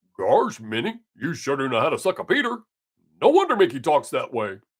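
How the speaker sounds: swooping pitch, like a cartoon dog. Doing a stand-up bit his kids have heard, Goofy impression. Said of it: "my impression of Goofy".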